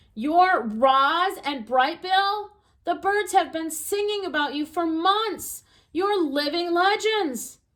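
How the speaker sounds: little squeak bubbling with excitement, one word stretched. Narrating a voice greeting the robot and its adopted son, in a squeaky excited voice. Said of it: "the voice squeaked with excitement".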